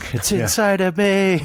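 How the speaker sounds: very high shriek of sheer panic. Playing a character as gold bars vanish into him: screaming in panic. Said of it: "run screaming".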